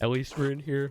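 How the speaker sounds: talking through a yawn. Someone preparing a feast indoors on a cold day, yawning. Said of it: "Sorry for yawning".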